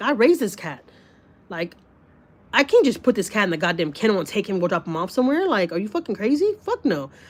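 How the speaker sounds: usual speaking voice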